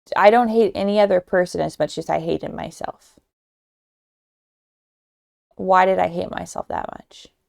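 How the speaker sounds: holding back tears, on the verge of crying. Talking about hating oneself as a teenager, about to cry. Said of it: "I'm about to cry right now".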